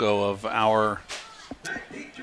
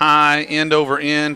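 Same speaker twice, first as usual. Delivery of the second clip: ordinary delivery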